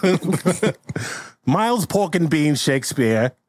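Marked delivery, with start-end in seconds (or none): 1.4-3.3 higher put-on old-fashioned UK accent. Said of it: "You gotta do an accent".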